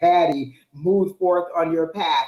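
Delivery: grand, booming, drawn-out voice. Imagining a voice from the Lord during a spiritual moment; booming voice of the Lord. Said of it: "this grand booming voice from the Lord".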